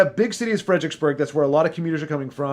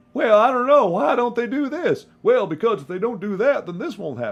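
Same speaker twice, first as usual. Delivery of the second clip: high-pitched, thick put-on country accent, laid on heavily; 7 semitones higher than usual. Imitating talking cones on screen: imitating a thick country accent. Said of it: "thick country accent".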